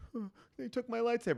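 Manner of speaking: mock, very high, close-to-tears teary lament. Retelling a son's complaint that his lightsaber was taken: imitating someone tearing up. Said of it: "he's kinda tearing up and he's like".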